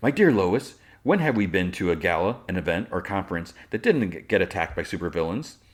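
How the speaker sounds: plain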